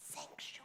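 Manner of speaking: whispered, barely voiced, very quiet and breathy. Showing children how to say the cue word: whispering the word sanctuary. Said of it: "you're gonna whisper".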